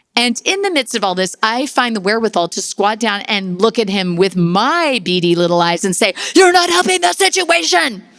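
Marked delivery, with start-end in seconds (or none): 6.4-8.0 loud high yelling. Retelling a story, the speaker re-enacts what they yelled at him: retelling a yell. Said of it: "as I yell that".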